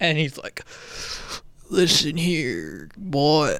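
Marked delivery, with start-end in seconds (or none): 1.7-3.6 put-on slow, poorly done old-man voice. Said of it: "the voice that Emilio Estevez does for the old man".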